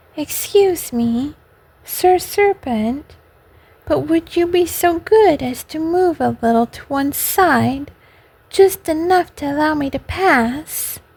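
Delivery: soft ingratiating wheedling. Narrator reads a character politely addressing a serpent, soft, insinuating voice. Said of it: "in a little soft, insinuating voice".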